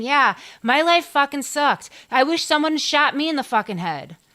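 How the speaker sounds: high ghostly voice. Giving a voice to the spirit in a story: voicing Frank James' spirit. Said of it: "he needs a voice saying".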